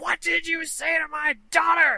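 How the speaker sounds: piercing, very high, enraged furious yell. Retelling how an angry mother confronted a customer: imitating an angry mother shouting. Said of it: "and then she shouts".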